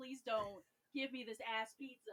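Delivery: mumbled, desperate, pleading tone. Retelling a spin of a prize wheel: imitating own praying. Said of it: "praying to pizza Jesus".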